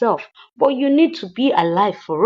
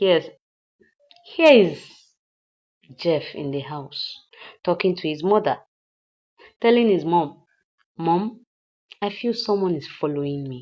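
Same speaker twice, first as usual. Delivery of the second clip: ordinary talk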